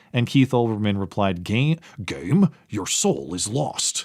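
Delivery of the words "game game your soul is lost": slow, drawn-out character voice with wide pitch swings. Quoting a reply to a tweet: best Keith Olbermann impression. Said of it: "That's my best Keith Olbermann impression".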